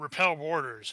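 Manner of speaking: ordinary talk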